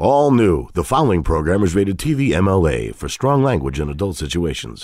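tv promo announcer voiceover delivery. Showing the voiceover he does for a TV show, in TV announcer voice. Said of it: "I do the voiceover for that show".

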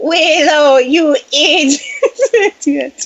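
high-pitched, bleating goat voice. Speaker quoting her favorite movie line, said by a character turned into a goat: goat voice. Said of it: "Into the goat voice too".

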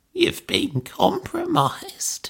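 very high, croaking voice. Reading a story aloud, a character gasps and turns to face another, croaking. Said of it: "she croaked".

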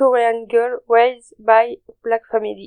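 slow, careful English accent. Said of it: "attention à mon accent anglais".

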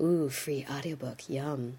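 very soft, very low, hushed, sultry murmur. Reading a podcast sponsor ad for Audible: sexy indoor voice. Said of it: "I'm using my sexy indoor voice for this".

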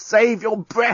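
out of breath. A collapsed woman answers a man whispering to her, panting. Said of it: "panted Lucy".

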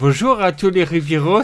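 fake Quebec French accent, very slow. Greeting the Rivieros after being asked: put-on Québécois accent. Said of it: "Dis bonjour aux Rivieros avec l'accent québécois".

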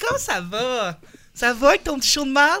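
ironic mocking voice. Introducing a guest, the host acts out her reply: imitating Marie-Claude. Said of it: "t'es comme".

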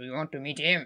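low growling voice. Retelling a scene, quoting Owen speaking to Obi-Wan, imitating Owen growling. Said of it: "en grognant genre".

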